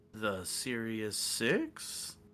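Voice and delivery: eerie, ominous, spooky, swooping haunted voice. Showing how the shop repeats your voice back, spooky voice. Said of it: "that's spooky".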